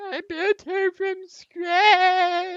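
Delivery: very high, loud, broken-down sobbing cry. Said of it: "he just falls down on his knees, crying, saying".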